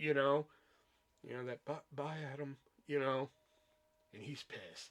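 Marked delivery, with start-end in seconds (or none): 1.7-2.6 soft, sad, halting, hesitant delivery. Reacting to a scene, repeating an actor's goodbye line: imitating Dave Foley's sad hesitant goodbye. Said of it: "he's so sad that Eve did this".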